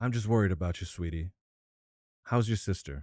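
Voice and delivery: confiding, caring tone. Acting out a woman leaning in toward the speaker, in a lowered voice. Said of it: "She kind of lowers her voice".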